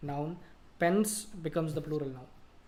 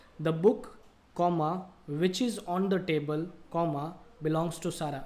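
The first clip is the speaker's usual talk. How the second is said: slow delivery with careful pauses. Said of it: "I'll give you an example".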